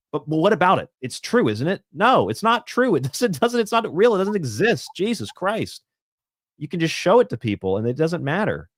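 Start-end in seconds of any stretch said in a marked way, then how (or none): 1.9-8.6 heated, agitated, worked-up rant with swooping pitch. Ranting about a rumour to the others, getting worked up. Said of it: "Sorry, I'm getting worked up".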